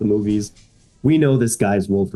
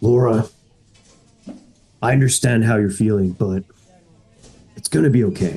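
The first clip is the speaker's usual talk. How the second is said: put-on gruff voice. Voicing Wolverine comforting an anxious player: gruff Wolverine voice. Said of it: "there's this gruffy voice next to you that tells you".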